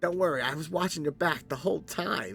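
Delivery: high voice of a talking bat. Voicing a bat who reassures a player: talking bat voice. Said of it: "and you see a bat hanging".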